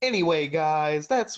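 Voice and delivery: loud show-announcer voice. Teasing the other speaker about how they announce things: imitating an announcer voice. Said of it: "sounds like an announcer voice".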